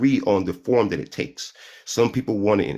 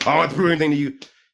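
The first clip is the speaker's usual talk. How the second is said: acted, combative, hostile tone, pitched up; 7 semitones higher, 3 dB louder than usual. Mimicking the other speaker's reply back at him: imitating a hostile tone. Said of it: "yours is already kinda".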